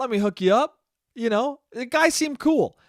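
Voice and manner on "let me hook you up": polite, courteous manner. Retelling a guy offering weed to a woman: imitating a polite offer. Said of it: "Very politely, very like".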